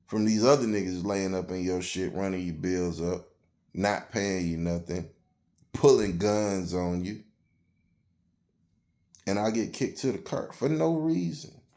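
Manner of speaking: usual speaking voice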